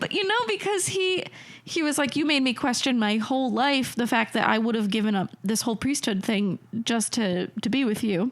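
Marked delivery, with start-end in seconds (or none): none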